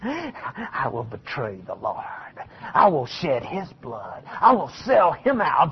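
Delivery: acted, very low, smug, self-satisfied villain murmur. Describing Judas sitting there, acting out his lines, imitating smug Judas. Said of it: "sitting over there smugly going".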